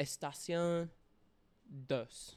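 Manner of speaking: Spanish words spoken with a French accent. Podcast host welcoming listeners back for season two, Spanish with a French accent. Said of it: "Why did I speak Spanish with a French accent?".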